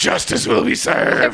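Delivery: put-on brooding superhero voice. Explaining how Bruce Wayne switches from talking normally, the speaker does a Batman voice. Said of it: "talks normally and then".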